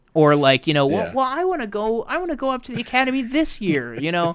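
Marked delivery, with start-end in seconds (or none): 0.8-3.9 very high, swooping, sing-song whine. Quoting a film scene to a co-host: whiny Luke Skywalker voice. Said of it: "Mark Hamill's so whiny".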